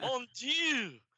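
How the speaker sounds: bad put-on French pastry chef accent. Joking that the silent T is French: bad French pastry chef accent. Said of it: "doing the bad pastry chef accent".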